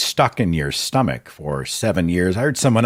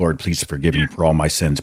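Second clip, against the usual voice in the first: imitated whispering under the breath; 2 semitones lower than usual. Retelling an old habit of praying: imitating whispering under the breath. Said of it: "whispering it under my breath".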